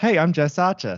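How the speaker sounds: poor put-on Australian accent. Retelling saying a name out loud before recording, in a bad Australian accent. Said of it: "I have a really bad Australian accent".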